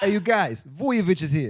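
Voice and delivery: put-on Italian accent held throughout. Joking about a surname, announcing that vujovic is here: put-on italian accent. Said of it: "Saying it with an Italian accent".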